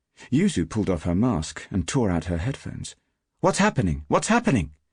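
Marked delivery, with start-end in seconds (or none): 3.4-4.7 very high, furious voice with an edge of fear. Narrating Yuzu tearing out her headphones, furious but a little frightened. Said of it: "furious but a little bit frightened too".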